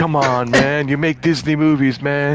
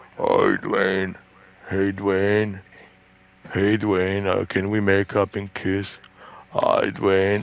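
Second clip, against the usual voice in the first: phony deep voice, pitched low into bass; 6 semitones lower, 5 dB quieter than usual. Imagining Vin Diesel coming to the door: phony deep voice. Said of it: "Like the way he says".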